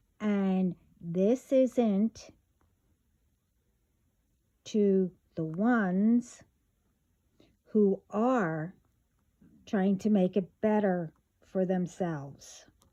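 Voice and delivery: speaking slowly. Addressing everyone in a morning message, speaking slowly. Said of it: "I want to make sure I will speak slowly".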